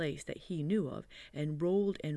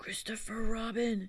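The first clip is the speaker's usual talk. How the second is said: loud, high-pitched whisper; 7 semitones higher than usual. Reading a story, he is stuck out of reach of the honey and calls down: loud whisper. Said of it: "he said in a loud whisper".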